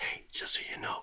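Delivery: hushed whisper. Showing how they must talk at home so a sleeping baby isn't woken: whispering. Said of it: "So I have to whisper".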